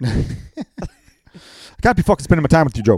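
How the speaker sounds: loud, put-on Irish accent. Act out McGregor answering Joe, who would be in his ear all night, McGregor accent impression. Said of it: "I followed your accent with my shit".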